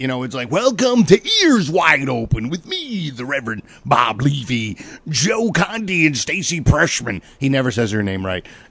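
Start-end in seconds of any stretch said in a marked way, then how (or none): 0.5-7.2 put-on big, dopey, dim pro wrestler voice. Imitating a host coming out of a break: Bob Levy wrestler voice. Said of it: "he turns into this like mentally challenged wrestler when it's time to go to a break".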